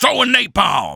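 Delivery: gritty, yelled hero voice. Quoting the hero's voice line when he throws napalm: imitating the hero's battle call. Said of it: "He's like".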